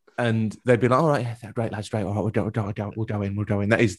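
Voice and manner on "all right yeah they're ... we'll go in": casual, relaxed, different voice. Retelling how staff answered a request for players: impression of Simon. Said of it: "a really good impression of Simon".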